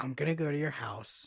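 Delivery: put-on calm, menacing delivery. Quoting a movie character's threat, imitating a calm delivery. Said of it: "she says it so calm".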